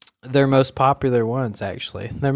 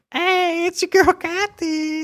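very high, raspy grandma voice. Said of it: "a really hilarious voice".

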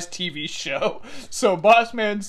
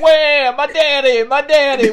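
heavy put-on Southern accent, much louder, higher, slower; 7 semitones higher, 9 dB louder than usual. Retelling how someone on television mocked a man whose dad died, thick Southern accent. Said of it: "with this like thick ass Southern accent".

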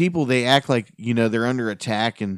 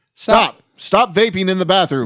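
loud, high, mechanical blaring robot alarm voice; 8 semitones higher, 7 dB louder than usual. Describing the school bathroom vaping alarm, the speaker imitates it: Lost in Space robot voice. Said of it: "And it was like the voice from".

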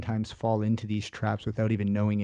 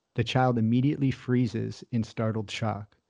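ordinary delivery, nothing marked

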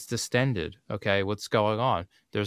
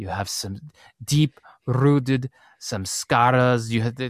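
put-on meditation-teacher voice; 2 semitones higher than usual. Quoting the meditation master's taped teachings: imitating S N Goenka. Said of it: "and he would go".

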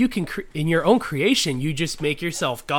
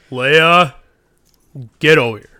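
put-on grown man, dad-like voice; 10 dB louder than usual. Calling Leia over during play, the speaker puts on a dad voice. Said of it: "Man voice right now".

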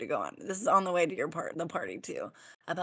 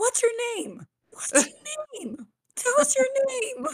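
put-on very high, very loud, shrill, rising children's shouting; 9 dB louder than usual. A parent retells the kids at an intercom speaker: imitating kids yelling. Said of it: "Stop yelling".

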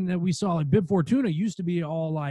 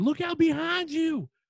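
mock very high-pitched yell; 12 semitones higher than usual. Retelling watching a scene like a theater patron: imitating a shouting moviegoer. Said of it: "that guy in the movie theater".

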